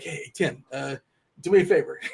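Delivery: hushed, secretive, quiet half-whisper. Acting out asking a show host for a favor, half-whispering. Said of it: "I don't know why I'm whispering".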